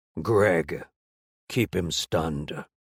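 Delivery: very low, deep, guttural voice. Narrator reads an unseen speaker commanding an ally during a fight: guttural commanding voice. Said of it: "a guttural voice commanded".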